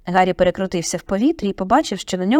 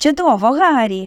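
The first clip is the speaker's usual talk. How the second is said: happy, satisfied, pitched-up exclamation; 5 semitones higher, 3 dB louder than usual. Narrator reads one of the joyful crowd around the player: happy exclamation. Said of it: "задоволено вигукнув Персі".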